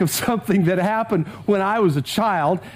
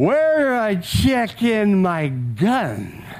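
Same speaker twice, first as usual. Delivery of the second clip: mock-slurred speech, much slower. Retelling what a man holding a shotgun asked, imitating a slurred voice. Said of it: "he kind of says in this slurred voice".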